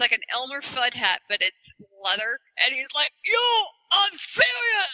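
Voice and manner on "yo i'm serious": comic, playful, very high-pitched voice. Retelling a stage show, imitating the actor playing Sirius. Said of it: "when he plays Sirius".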